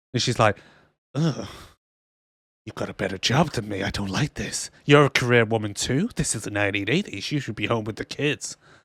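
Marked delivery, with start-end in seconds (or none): 1.2-8.6 mock snide, catty tone, lower and quieter. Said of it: "But they're so bitchy to each other".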